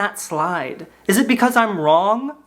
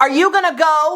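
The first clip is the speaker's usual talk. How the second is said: put-on pushy, nervous, loud, anxious, high voice; 7 semitones higher, 3 dB louder than usual. Retelling a woman on a plane pressing the speaker to leave; imitating a loud woman. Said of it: "she was being so loud".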